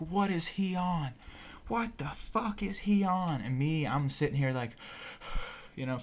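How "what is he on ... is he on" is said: high, drawn-out, frantic panicked screaming. Retelling his parents freaking out over him: imitating someone screaming. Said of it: "they start screaming, freaking the fuck out".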